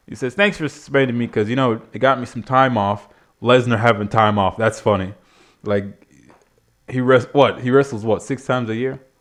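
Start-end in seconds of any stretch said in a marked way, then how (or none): none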